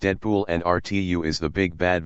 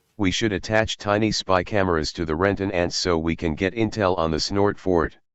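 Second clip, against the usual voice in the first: normal talking voice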